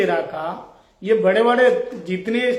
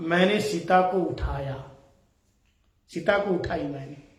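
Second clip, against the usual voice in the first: soft, lower in pitch and quieter; 5 semitones lower, 7 dB quieter than usual. Telling the story, the narrator voices Kumbhakarna's brother confessing, retelling words said softly. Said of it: "तो धीरे से कहा".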